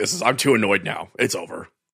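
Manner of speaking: put-on gruff detective voice. Retelling why he pulled it from stores, as Dong Nguyen gruff detective. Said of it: "Why does he sound like a gruff detective?".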